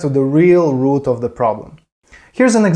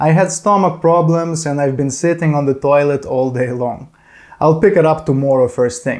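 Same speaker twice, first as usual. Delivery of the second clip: ordinary talk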